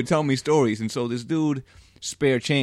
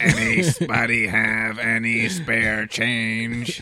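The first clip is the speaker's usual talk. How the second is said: imitated crazy-sounding man's voice. Imitating a man downtown asking for spare change: imitating a man's crazy voice. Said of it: "that has the crazy voice".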